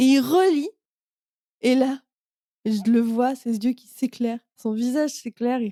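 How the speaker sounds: tearing up, on the verge of tears. Recounting how a man reacted when reading, tearing up. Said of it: "il a les larmes qui montent comme moi là maintenant".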